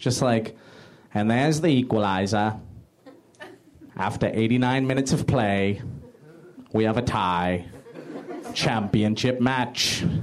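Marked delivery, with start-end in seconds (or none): 1.1-10.0 put-on level, unexcited British sports announcer accent. Imitating a regular british soccer announcer calling a tie: imitating a regular british announcer. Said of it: "a regular British announcer".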